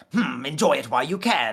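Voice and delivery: conniving, scheming evil British villain voice. Imitating a favorite Yu-Gi-Oh! villain: Bakura voice. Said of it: "evil British voice, like, conniving".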